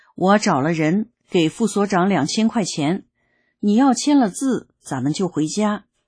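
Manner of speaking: ordinary delivery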